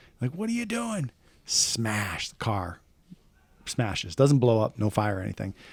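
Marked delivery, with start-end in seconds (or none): 0.3-1.1 very high-pitched yelling. Retelling a friend yelling out a car window at another driver: imitating Tony yelling. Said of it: "yelling out the window".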